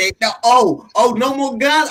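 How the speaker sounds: ordinary talk, nothing marked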